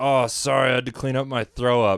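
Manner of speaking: ordinary talk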